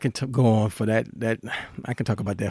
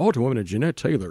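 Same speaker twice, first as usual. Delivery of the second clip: put-on announcer voice. Host starting the show by introducing the guest, in an announcer voice. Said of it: "I want to do my announcer voice".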